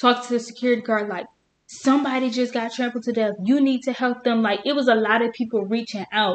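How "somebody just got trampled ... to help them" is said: loud, higher, put-on girlish scream. Retelling what a girl said to the security guard: imitating a girl screaming. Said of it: "she was screaming to the top of her lungs".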